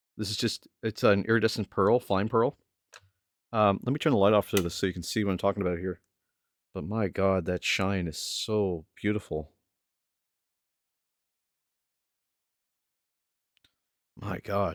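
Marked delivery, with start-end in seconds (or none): 6.8-14.8 very slow, drawn-out delivery, slightly moved. Showing viewers the shine of a pearl paint, a little emotional. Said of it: "a little emotional here".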